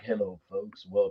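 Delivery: very soft, deep, hushed bass voice.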